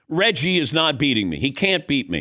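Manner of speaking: plain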